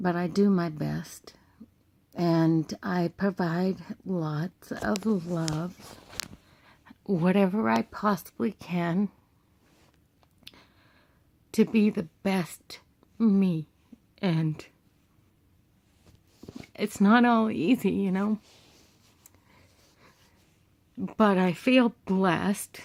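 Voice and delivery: tearful, crying while speaking. A single mom talks about providing for her family, crying while speaking. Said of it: "I shouldn't be crying".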